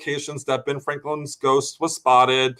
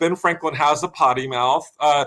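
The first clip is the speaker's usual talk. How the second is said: plain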